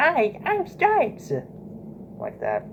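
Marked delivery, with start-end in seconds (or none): 0.0-1.3 put-on childlike voice, pitched way up. Showing the voice made for the character Stripes, Stripes child voice. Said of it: "high pitched voice made by me".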